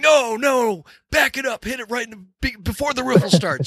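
acted, very high-pitched yelling. Retelling how a man yelled at the speaker while fishing, imitating someone yelling. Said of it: "And he's like yelling at me".

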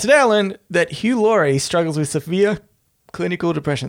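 speaking with hiccups breaking in. Reading a today i learned post aloud, hiccuping while talking. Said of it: "I'm just hiccuping".

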